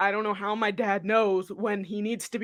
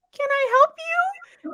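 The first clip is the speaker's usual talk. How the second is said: put-on small, very high-pitched little-girl voice; 3 dB louder than usual. Retelling when an officer barged in, speaker answers him in tiny young girl voice. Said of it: "in my tiny little like young girl voice".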